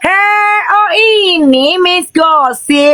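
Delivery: high, slow, stretched-out yell with "ini" dragged out. Retelling what they shouted at someone: imitating own yell. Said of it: "emang gue teriak".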